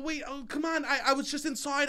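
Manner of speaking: mock whiny loud pleading. Speaker retells reacting to a parking ticket while double parked, retelling in a whiny loud voice. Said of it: "I go instantly back to whiny loud voice".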